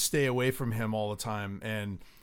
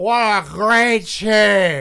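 put-on very loud, very slow drunken drawl, "team" stretched; 9 semitones higher, 14 dB louder than usual. Retelling a drunk Super Bowl speech: Bob Kraft impression. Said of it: "that's a really good Bob Kraft impression".

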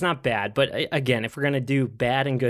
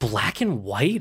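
mock scandalized, aghast, indignant disbelief with a gasp. Retelling a character stopping at a poster: imitating an indignant gasp. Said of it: "has the most indignant look on her face and just goes".

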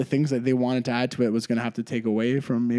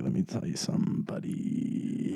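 put-on sultry low voice, soft and breathy; 7 semitones lower, 8 dB quieter than usual. Do your impression right up to the mic, in a put-on sexy deep voice.

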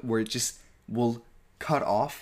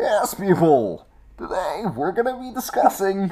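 grand villain voice, loud, raised, high and booming; 8 semitones higher, 7 dB louder than usual. Describing how someone opens each episode, the speaker does a Bane voice. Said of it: "opens up his bane".

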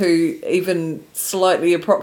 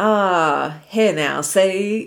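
put-on old-time forties American accent, drawn-out "ah". Discussing ways to fake an American accent, offering a 1940s American accent.

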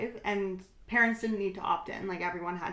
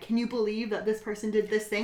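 ordinary talk, nothing marked

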